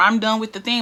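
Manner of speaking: ordinary talk, nothing marked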